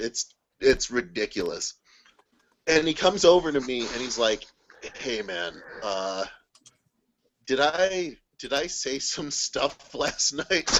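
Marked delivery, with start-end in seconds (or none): 4.9-10.8 play-acted, slow, dragging hungover voice. Retelling a friend asking the next day what he said: imitating hungover Ryan. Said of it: "he's so hungover".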